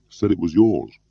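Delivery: ordinary delivery, nothing marked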